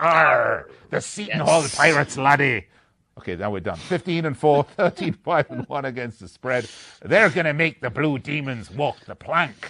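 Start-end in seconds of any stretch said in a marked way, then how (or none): 0.0-2.6 stock put-on pirate voice with "arr" and "laddie". Previewing a game, announcing the Seton Hall Pirates in a pirate voice. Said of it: "I am going to do my pirate voice".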